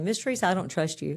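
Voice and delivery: ordinary talk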